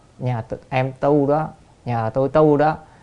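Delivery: ordinary delivery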